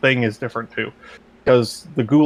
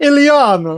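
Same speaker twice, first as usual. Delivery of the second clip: put-on Russian accent, higher and louder; 12 semitones higher, 5 dB louder than usual. Retelling a movie scene, calling out a name: Colossus voice. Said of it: "that's what Russian Superman sounds like to me".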